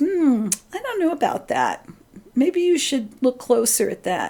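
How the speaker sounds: doubtful little inner voice. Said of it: "that little voice inside of you says".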